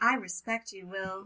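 very creepy, eerie voice. Acting out a reply in an argument: creepy Stepford Wife voice. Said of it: "super creepy".

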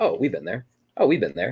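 normal talking voice

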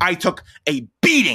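groaning, with "beating" stressed.

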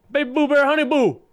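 very high-pitched, loud calling voice. Retelling calling across a store aisle: imitating own loud call. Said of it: "loud as fuck".

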